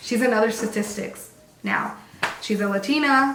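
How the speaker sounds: ordinary delivery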